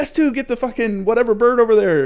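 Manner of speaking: high, loud yelling.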